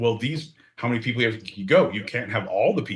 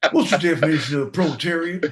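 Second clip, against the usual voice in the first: put-on Texan accent, pitched up; 5 semitones higher, 4 dB louder than usual. Repeating the question in a joking Bill Clinton impression: Bill Clinton in a Texan accent. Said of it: "he had it in a Texan accent".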